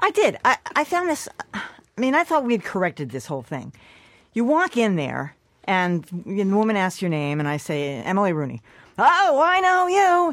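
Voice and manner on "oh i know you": mock booming, pitched-up, very slow, drawn-out, very loud voice. Retelling what the woman who asked her name said: retelling a very loud greeting. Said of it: "she says in a very loud voice".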